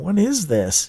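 wary, suspicious. Narrator reading a character's question, suspicious. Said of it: "Worm asked suspiciously".

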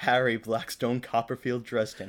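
ordinary talk

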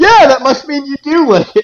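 very high mocking jeer. Recapping a story, the speaker voices one character's mocking reply to another: retelling a mocking reply. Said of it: "he just gets a mocking".

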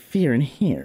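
heavy stress on here, voice cracking at the h. Talking about a funny way of saying fear in here, stressed here with break at h. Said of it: "You got to put a lot of it on, like, the second part. It's like, there's, like, a little, like, break in the voice at the H".

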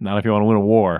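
ordinary talk, nothing marked

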